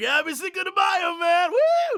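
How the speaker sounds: very high, whooping frat-party reveler voice. Mocking Americans on Cinco de Mayo: imitating partying Americans. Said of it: "And everyone's like".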